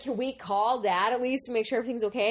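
ordinary talk

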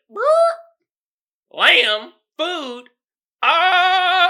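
mock very slow, high, perked-up wondering. Imitating Juice perking up at the word lamb: imitating Juice perking up. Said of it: "Juice perked up. He was like".

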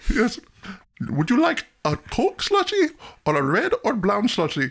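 put-on heavy, laid-on Indian accent. Showing the others the Simpsons store owner, in an Apu impression. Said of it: "That's my best Abu".

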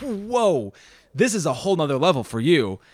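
usual speaking voice

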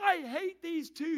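shrill, very high-pitched, drawn-out screaming. Retelling a passenger's outburst to flight attendants on a jet, imitating someone screaming. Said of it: "she's screaming".

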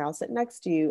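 ordinary talk

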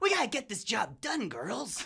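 high, swooping, pitch-swinging animated cartoon cat voice. Asked by the others to perform it, the speaker does an Uncle Artemis voice. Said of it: "Let's hear Uncle Artemis".

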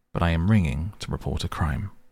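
ordinary delivery

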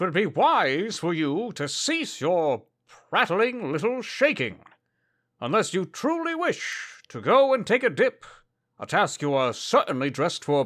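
formal, archaic knight character voice. In a tabletop game, a player speaks as a knight to someone kicking on their shoulder, formal archaic knight voice. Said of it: "knight character speaking formally in play".

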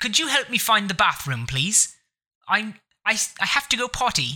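put-on proper British accent. Taking turns trying out accents, doing a proper British accent. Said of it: "there's the proper British accent".

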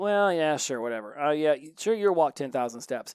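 dismissive-sounding voice.

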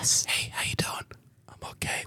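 in a whisper. Acting out a greeting between two people who start whispering, whispering. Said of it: "Why are we whispering?".

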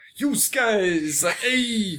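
pushy, aggressive, high put-on Brooklyn accent. Praising Shredder's lead recruiter, imitating his aggressive Brooklyn accent. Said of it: "so aggressively like".

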